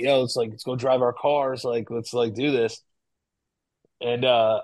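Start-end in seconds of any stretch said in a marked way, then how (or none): none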